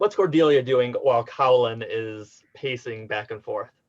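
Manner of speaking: normal talking voice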